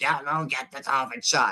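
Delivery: hoarse, worn-out, spent, barely-there voice. Joking that a hoarse voice sounds like Robert Kennedy: Robert Kennedy impression. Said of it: "I sound like Robert Kennedy now".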